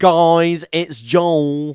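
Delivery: put-on brain rot slang voice, "guys" drawn out. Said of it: "going with the twenty twenty-six, uh, brain rot lingo".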